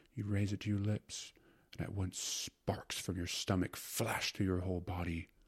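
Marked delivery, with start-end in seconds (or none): none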